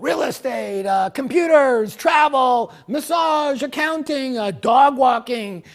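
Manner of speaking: loud, high-pitched shouting out.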